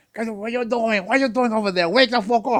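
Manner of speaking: put-on speaking in a Dominican accent. Describing a parent yelling at his son at baseball: imitating a Dominican accent. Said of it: "I know the accent".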